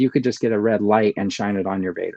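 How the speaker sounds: normal talking voice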